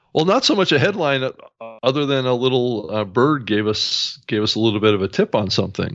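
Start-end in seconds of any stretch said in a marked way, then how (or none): 4.2-5.9 said really fast, rattled off, rushing. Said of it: "I know I said it really fast".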